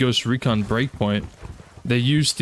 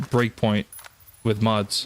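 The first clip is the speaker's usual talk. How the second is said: ordinary talk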